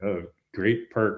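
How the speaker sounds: sarcastic tone. Answering the other speaker's remark about transferable skills: sarcastic. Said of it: "I said that sarcastically".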